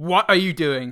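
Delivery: startled snap. Retelling a film moment where a character snaps awake: imitating a startled snap. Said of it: "she kind of snaps awake with a kind of".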